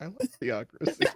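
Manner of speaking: tiny, hushed, very quiet whisper. Retelling a line someone said during a game session: imitating Mary whispering very quietly. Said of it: "Mary just whispered very quietly".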